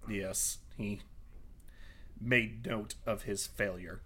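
low, soft, disappointed tone. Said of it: "Oh, you sound so disappointed".

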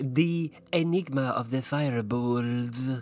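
words given a Russian accent. Asked by a co-host to say the title in a Russian accent: Russian accent. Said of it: "Say it in your Russian accent".

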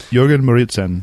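fake German accent. Introducing a guest from Denmark, saying his name in a put-on German accent. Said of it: "I said it with a German accent".

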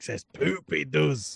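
put-on Scottish accent. Joking about Shrek's bed, speaking in a Shrek Scottish accent. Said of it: "I appreciate your Mike Myers Shrek Scottish accent".

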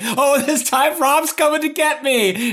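mock very high-pitched, shrill, desperate scream. Joking about a game's AI, acting out the captain's cries: imitating Captain Keyes screaming. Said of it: "has just been screaming like".

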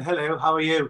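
posh, proper, well-spoken, polished voice. Retelling how the actor greeted people off set: imitating a well-spoken actor. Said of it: "he's very well spoken".

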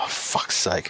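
mutter under breath. Speaker retells reacting to a radio pregame mention of the referee, muttering under breath. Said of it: "under my breath".

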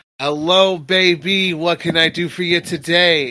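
smiling, grinning voice. Speaker voices a character who smiles and greets a player; smiling greeting. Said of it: "he smiles and goes".

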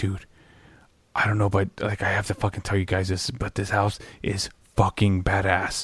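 very quiet, low, hushed whisper close to the mic. Retelling a man whispering to the guys: imitating someone whispering. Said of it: "he starts whispering into Mike".

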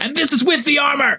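very high, acted, in-character yell. Doing one push-up in armor, yelling in character. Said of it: "I'm yelling".

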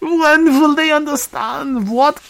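put-on, very high, loud, fake Russian accent. Joking about Americans with a put-on foreign accent that sounds Russian. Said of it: "that's Russian".

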